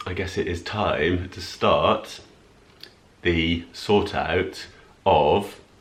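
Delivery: slow, dragged-out, reluctant drawl. Putting off starting a cupboard declutter: talking slowly. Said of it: "I'm talking slowly because I don't want to start it".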